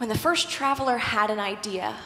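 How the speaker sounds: plain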